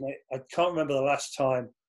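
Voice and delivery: ordinary talk, nothing marked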